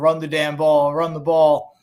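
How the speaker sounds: ordinary delivery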